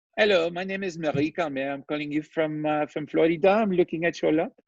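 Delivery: put-on Haitian-accented speech. Retelling a phone call from a buyer: imitating a Haitian accent. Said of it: "this Haitian voice comes on with the cute "hello,"".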